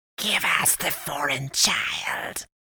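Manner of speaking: slow, breathy, hissing whisper. A figure in the doorway answers a man's address, hissing. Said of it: "the one in the door hissed".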